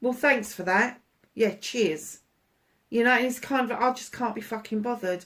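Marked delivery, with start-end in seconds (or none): 0.0-2.2 put-on sarcastic tone. Describing how you answer people who keep poking at you: acting out sarcastic thanks. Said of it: "it's that sarcastic".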